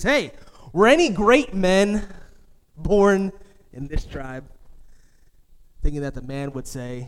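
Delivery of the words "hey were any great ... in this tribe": mock condescending, superior, smug, patronizing tone. Retelling a story of an old man asking a question: imitating a smug, patronizing tone. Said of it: "in a smug way, patronizing way".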